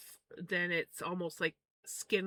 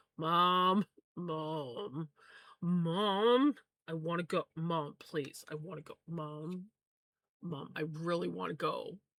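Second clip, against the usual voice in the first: mock pleading voice; 2 semitones lower than usual. Imitating the one who did not want to be held: mock pleading. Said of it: "he's like".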